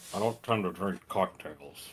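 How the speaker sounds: very low, very soft mumble through a mouthful. A character chatting about cocktail sausages, talking with mouth full. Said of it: "He says with food in his mouth".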